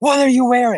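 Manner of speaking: put-on, very high, shrill scream. Retelling how a rival fan banged on the van window: imitating a fan screaming. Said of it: "screaming at us".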